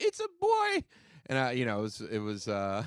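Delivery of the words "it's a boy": put-on very high, raised child voice. Retelling answering the phone as a kid: imitating own high childhood voice. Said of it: "I think my voice was high".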